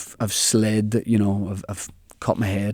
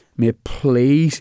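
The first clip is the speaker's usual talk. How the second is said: mock-crying voice, higher; 4 semitones higher, 4 dB louder than usual. Retelling begging a mate for a lift, imitating own crying. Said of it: "and I was like crying".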